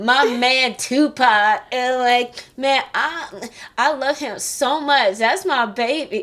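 fake American accent, high, loud and slow. Recounting an unresearched audition, copying early Halle Berry roles in a fake American accent. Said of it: "with like a fake American accent".

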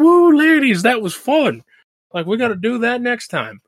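mock giddy, very high, bouncy, loud, swooping happy whoop. Recapping a movie, acting out Stuntman Mike pulling over, mock-happy. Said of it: "he's just all happy".

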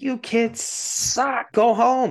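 put-on very high, very slow, drawn-out old-lady yell. Retelling an old lady in a theater yelling at talking kids, imitating an old lady yelling. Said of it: "stands up and yells at them".

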